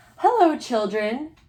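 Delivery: sweet, high, sweetly spoken voice. Reading a story aloud, someone arriving from the hall greets the children, sweet voice. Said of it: "said somebody in a sweet voice".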